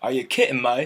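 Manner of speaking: put-on British accent with "me" said as "may". Retelling a meme about british people: imitating a british accent. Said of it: "they put "may" instead of "me."".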